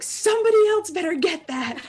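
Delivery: mock shouting. Retelling what someone shouts when a knock comes at the door, retelling a shout. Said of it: "Lena just shouts like".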